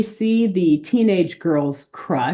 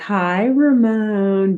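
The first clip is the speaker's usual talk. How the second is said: mock coy, flirty, flirtatious voice; 4 semitones higher than usual.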